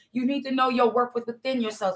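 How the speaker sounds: plain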